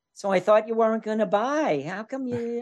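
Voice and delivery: play-acted very high, playful, ribbing tone. Retelling the car ride home with a woman who bought anyway, retelling teasing her. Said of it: "And I was teasing her".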